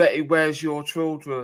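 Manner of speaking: ordinary delivery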